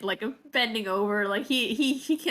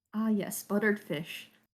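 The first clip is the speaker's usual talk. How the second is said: quiet mutter under the breath. Voicing a character speaking too low for the noble to hear: muttered under his breath. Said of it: "he does say kinda under his breath".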